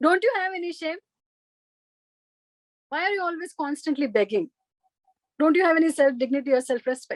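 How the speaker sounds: mock exasperated rich man voice. Retelling a parable, voicing a rich man scolding a beggar: imitating an exasperated rich man. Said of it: "the rich man got so exasperated and frustrated with him".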